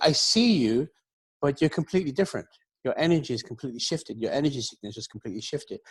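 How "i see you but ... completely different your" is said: usual speaking voice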